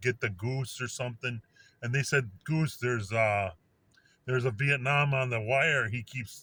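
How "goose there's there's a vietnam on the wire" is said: ordinary talk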